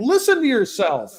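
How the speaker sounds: high, swooping, mocking tone.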